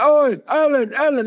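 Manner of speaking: play-acted, very high, eager shouting calling out. Retelling getting out of the car at an awards event: imitating paparazzi shouting. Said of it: "you got all the paps shouting".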